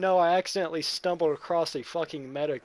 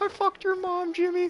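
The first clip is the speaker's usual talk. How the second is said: deliberately terrible, silly voice, pitched very high. Joking about Jimmy and sexes: bad Carl Wheezer voice. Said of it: "my stupid ass Carl voice".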